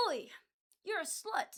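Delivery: put-on British accent. Mocking annoying british people in chat: imitating a british accent. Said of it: "the British people who are like".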